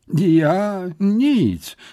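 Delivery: high, forced-out, stumbling stammered words. Accused by a furious woman of hurting the parrot, a man answers, stammering it out. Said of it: "wykrztusił Syfon".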